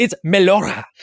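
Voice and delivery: put-on Greek accent. Pronouncing a word for the other speaker, in a fake greek accent. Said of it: "I'm gonna pronounce everything with a fake Greek accent now".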